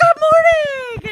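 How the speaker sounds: all chipper, very high, very loud. Retelling a greeting from the other speaker this morning: imitating a chipper greeting. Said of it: "He's all chipper and stuff".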